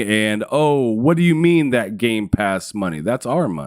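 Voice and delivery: ordinary delivery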